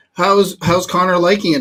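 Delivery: ordinary delivery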